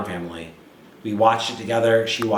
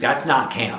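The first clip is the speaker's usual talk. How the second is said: mock put-out, offended, baffled, confused tone; 2 semitones higher than usual. Quoting a woman's reaction to something made for her, mock-offended. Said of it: "she was offended".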